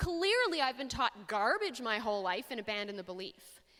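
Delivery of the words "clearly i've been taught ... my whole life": normal talking voice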